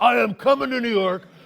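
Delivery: high, loud, enraged furious scream. Retelling a caller named Quentin on the line with the producer; retelling Quentin's furious scream. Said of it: "he starts screaming at me".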